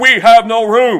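stern, slow, loud and high.

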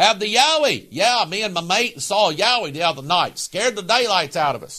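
worst-ever exaggerated put-on Australian accent. Speaker discussing Yowies, addressing Australian listeners, bad Australian accent. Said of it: "That's my worst Australian accent in the world".

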